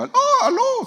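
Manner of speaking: put-on very high, cracking, breaking young-sounding voice. Imitating a boy answering the phone while his voice changes: imitating a voice changing in puberty. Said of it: "va cambiando la voz".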